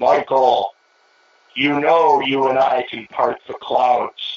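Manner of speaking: unhurried, drawn-out, slow and deliberate assured delivery. Retelling what Chief said as a storm approached: Chief impersonation. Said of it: "I'm doing my Chief impersonation".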